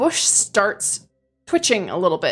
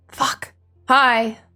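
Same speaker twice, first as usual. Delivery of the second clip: mumbled mutter under breath; 2 semitones higher than usual. Narrating a tabletop scene, the game master voices a woman muttering under her breath. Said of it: "just mutter under her breath".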